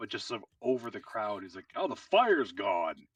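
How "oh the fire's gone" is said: loud call, lower and slower. A character calls out to Willow and Mint and the crowd: loudly called over a crowd. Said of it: "He's just gonna say really loudly".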